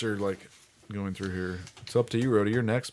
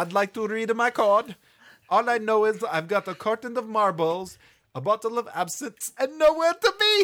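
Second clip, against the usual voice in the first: high, loud, mock Italian accent. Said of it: "That's pretty good".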